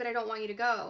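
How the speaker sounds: put-on tearful, crying voice. Retelling a dream, pleading with father not to leave: imitating own crying plea. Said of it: "I'm just crying and crying".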